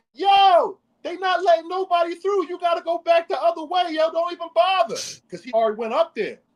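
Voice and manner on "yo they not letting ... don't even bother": very high hollered shout. Retelling someone on a narrow road turning people back: imitating someone yelling. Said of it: "comes out around the narrow road and yells".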